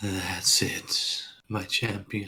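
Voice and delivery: faint, small, hushed voice, very soft. Voicing a voice in a character's head as he speaks: small voice in the head. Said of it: "a small voice say".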